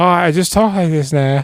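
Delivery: put-on British accent, high-pitched. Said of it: "fake British accents".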